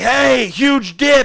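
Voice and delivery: high, urgent shout. Retelling a warning shouted at a friend on a scooter: imitating a warning scream. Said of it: "And we all screamed it".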